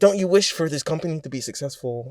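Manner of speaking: infectious, catchy, put-on genie character voice. Retelling a film scene in the wish-granting character's voice: imitating the wish-granting character. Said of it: "I keep doing his voice".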